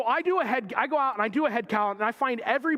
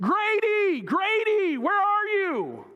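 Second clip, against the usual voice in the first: mock very high calling yell; 10 semitones higher than usual. Standing at the pond's edge searching for the missing Grady, retelling yelling his name. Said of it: "I'm yelling his name".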